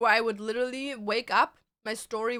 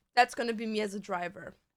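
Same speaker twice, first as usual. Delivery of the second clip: ordinary delivery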